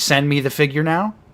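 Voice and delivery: ordinary talk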